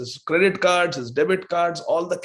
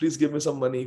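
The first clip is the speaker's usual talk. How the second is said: put-on pleading tone, lower; 3 semitones lower, 3 dB quieter than usual. Retelling a traveler begging for money: imitating someone begging. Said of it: "I was begging the Dhamvasis".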